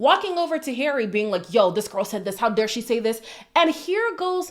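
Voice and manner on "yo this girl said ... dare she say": put-on furious voice. Retelling how a contestant confronts Harry: imitating an angry person. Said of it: "she's gonna be so angry, she's physically shaking".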